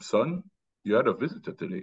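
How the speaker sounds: slight put-on Jamaican accent. Recalling his dad telling him he had a visitor, light Jamaican accent, imitating dad. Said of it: "in his like, you know, light Jamaican accent".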